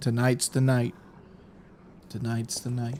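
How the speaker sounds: level, flat, one-note monotone. After asking if they can, a speaker says a line in a monotone voice. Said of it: "Can I say in a monotone voice?".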